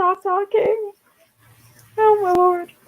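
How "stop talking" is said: very high, squeaky little voice. Voicing the timer that keeps interrupting them, the speaker uses a very high-pitched voice. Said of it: "My voice was so high right there".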